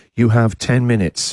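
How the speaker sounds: mechanical, automated robot voice. Retelling what a public toilet said when you walked in, in a mechanical voice. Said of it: "in a mechanical voice".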